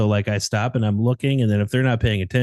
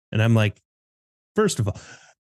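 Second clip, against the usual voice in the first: ordinary delivery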